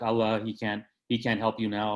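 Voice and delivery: ordinary talk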